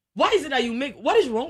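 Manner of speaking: high, loud hyper outburst. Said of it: "Abena, don't be hyper".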